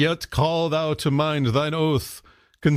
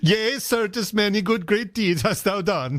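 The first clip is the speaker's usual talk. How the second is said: high, put-on, puppet-style comic Swedish accent; 6 semitones higher than usual. Reading an archaic line aloud as the co-host suggested, in a Swedish Chef voice. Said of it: "do it with like the Swedish".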